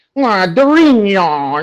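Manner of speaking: high put-on Paulista accent, one word drawn out. Asking a guest how they survived the Paulistas, the speaker mocks them: imitating a São Paulo accent. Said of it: "that horrible accent of the Paulistas like".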